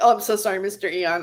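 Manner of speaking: mock, insincere, sorry-sounding apologetic tone. Retelling own apology to a blocked guest, mock insincere sorry tone. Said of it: "I'm like".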